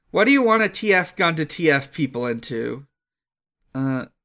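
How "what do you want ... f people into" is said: ordinary talk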